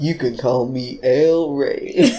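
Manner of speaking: put-on flirty, slow voice.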